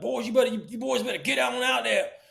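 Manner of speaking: mock very high, gruff cop voice, hollering. Retelling a night hiding in the woods, imitating a cop yelling. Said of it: "the cop yelling".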